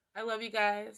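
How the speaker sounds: choked up, on the verge of crying. Thanking viewers for watching at the end, on the verge of tears. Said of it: "I'm gonna cry again".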